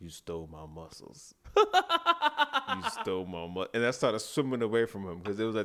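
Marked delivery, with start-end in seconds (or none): 0.0-3.7 eerie, swooping, very slow creepy sing-song taunting tone. Retelling a kid who rose from the pool, repeating his line: imitating a creepy kid. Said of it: "the creepiest thing".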